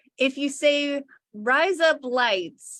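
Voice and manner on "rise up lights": Australian-accented phrasing. Showing how a phrase sounds in an Australian accent: Aussie accent. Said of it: "in an Aussie accent".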